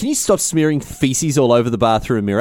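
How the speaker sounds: normal talking voice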